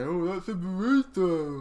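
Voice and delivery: mocking put-on voice, high-pitched and slow.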